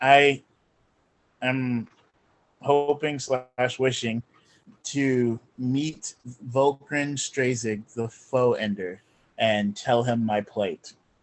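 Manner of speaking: soft, hushed half-whisper. Speaking in character to a spire, asking to meet someone: half-whispering. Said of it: "I'm gonna whisper and be like".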